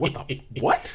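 annoyed, irritated, incredulous outburst. Retelling a movie death in the first minutes: imitating own angry reaction. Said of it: "but I was pissed".

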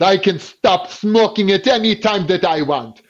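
put-on heavy Greek accent. Quoting his smoker dad's usual line, in a Greek accent. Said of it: "he got a very Greek accent".

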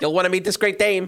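put-on old-timey 1920s American accent. Playing a character introducing someone: old-timey 1920s American accent. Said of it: "old-timey 1920s American accent".

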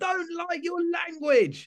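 very high, drawn-out, slow shout. A performer recounts what one of the crowd said, retelling a shout. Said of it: "one of them shouted".

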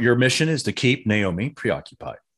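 ordinary talk, nothing marked

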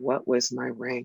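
very hushed, slow, deliberate speech. Retelling a question a woman asked: imitating someone speaking very quietly. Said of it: "she very quietly says".

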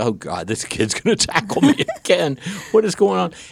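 laughing and alarmed, high-pitched. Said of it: "and I was like".

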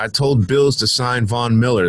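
ordinary delivery

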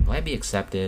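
ordinary talk

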